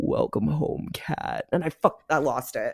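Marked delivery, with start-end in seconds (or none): 0.0-1.5 put-on deep, raspy voice, quieter, like a recording. Speaker retelling an EVP recorded in their basement, deep raspy EVP voice. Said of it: "the EVP was like this deep, raspy voice".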